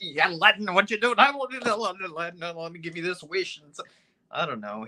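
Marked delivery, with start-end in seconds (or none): 0.0-3.6 hyper, high-pitched cartoon voice. Asked by the other speaker to do the genie from Aladdin: Genie from Aladdin voice. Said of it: "do the genie from Aladdin".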